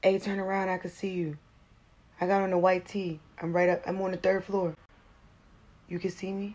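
soft, hushed, half-whispered stage whisper. Retelling how he called down from the balcony: imitating someone half-whispering. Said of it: "came out on the balcony and started whispering".

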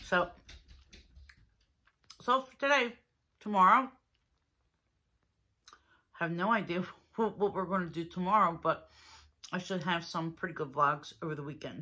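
speaking with mouth full, chewing. A vlogger eating a ganache-filled pastry signs off, talking with mouth full. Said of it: "Now I have my mouth full".

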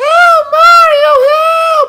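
very high, very loud, shrill, drawn-out damsel cry. Playing a game, the speaker voices a tied-up captive: captive princess voice. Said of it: "I have to assume it's a princess".

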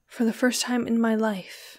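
softly murmuring, low. She speaks to the shrub while Giovanni watches her, murmured. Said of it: "murmured she".

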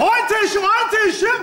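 exasperated, shouted fake English.

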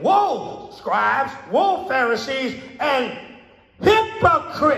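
slow, emphatic pronouncement with heavy stress on each word. Showing how to read the verse aloud: said louder with emphasis. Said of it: "You say it louder, you put emphasis on it".

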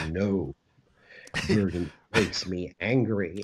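deep, low, slow voice. Recalling a celebrity customer buying Bordeaux, doing a Donald Sutherland deep-voice impression. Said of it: "with that deep voice".

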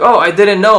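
high, loud, blurted dumb soldier voice, playing ignorant.

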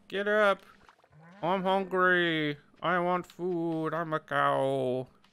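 very slow, drawn-out lowing cow voice. A streamer voices the farm animals yelling at them in the game, cow impression. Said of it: "That's a genuine cow impression".

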